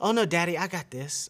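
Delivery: put-on independent-sounding girl voice. Acting out a daughter refusing help: imitating Mila. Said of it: "her famous words that she tells everybody".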